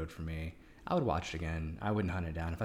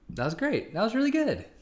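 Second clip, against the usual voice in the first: astonished, very high, very loud delivery; 9 dB louder than usual. After a Hallmark movie synopsis is read aloud, the speaker praises it, sounding surprised. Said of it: "you sound surprised every time".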